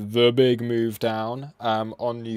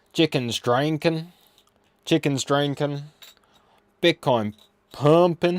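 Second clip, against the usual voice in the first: put-on old-timey American accent; 4 semitones higher, 4 dB louder than usual. Streamer trying out accents for viewers, doing the old american accent. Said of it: "I'll do the old American accent".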